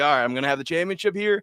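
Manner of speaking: ordinary talk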